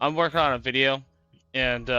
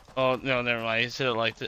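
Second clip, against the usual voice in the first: plain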